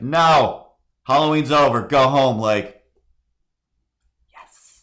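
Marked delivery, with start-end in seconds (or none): 0.0-2.4 loud, high, no-nonsense stern shout. Retelling how she yelled at the masked brother at the door: retelling her yell. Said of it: "She yelled like".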